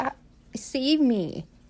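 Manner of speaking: acted-out, fearful, scared pleading voice. Voicing Ivy's thoughts as she looks around: voicing Ivy as scared. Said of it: "She's, like, scared. She's like".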